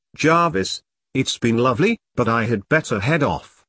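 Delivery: ordinary delivery, nothing marked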